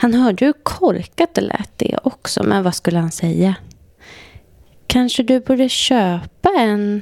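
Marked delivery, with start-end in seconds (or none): 4.9-7.0 slow, slightly tart, mildly sour delivery. A woman replies to a man who says he has no watch, a bit acidly. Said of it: "sa hon lite syrligt".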